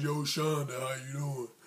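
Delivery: put-on deep, low voice, trying hard. Retelling a guy trying to get a girl's attention, fake deep voice. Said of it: "Dude was trying to do the deep voice like".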